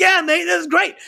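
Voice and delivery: put-on very high pitch, full, all-out British accent. Describing a stand-in drummer to the band, imitating John Dempsey, totally British. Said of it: "totally British".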